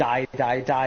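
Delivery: ordinary talk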